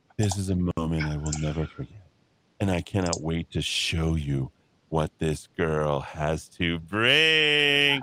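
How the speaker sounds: very low, deep bass put-on voice.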